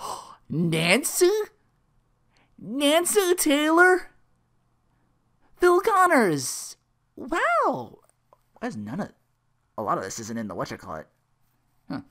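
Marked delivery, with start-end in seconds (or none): 0.0-8.0 very high, loud, very slow, amazed tone. Retelling a movie scene, imitating phil acting surprised at meeting someone. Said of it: "Phil's just like".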